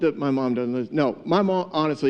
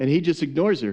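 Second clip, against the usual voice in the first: usual speaking voice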